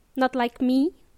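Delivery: ordinary talk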